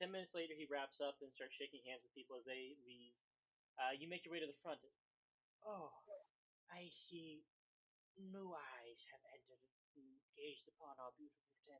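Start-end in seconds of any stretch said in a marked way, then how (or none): 5.7-11.8 put-on frail, slow, feeble elderly preacher voice. Old church father greeting newcomers who reach the front: frail old preacher voice. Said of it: "seems to be quite frail and quite old. / sh- a cane and shakily half step, ... seems to be quite frail and quite old. / He's like clutching his chest. / seems to be quite frail and quite old. / Uh, Fa".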